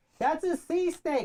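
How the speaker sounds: acted-out, very high, drawn-out kind-of yell. Telling a story about pointing something out to her, retelling a yell. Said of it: "so I'm like kind of yelling at her at this point".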